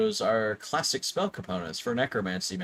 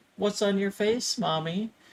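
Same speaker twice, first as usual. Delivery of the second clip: put-on trembling, high, quivering, fearful little child voice; 9 semitones higher than usual. A game master voices a child's question that a character hears, in a child's voice quivering with fear. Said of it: "a child's voice quiver with fear".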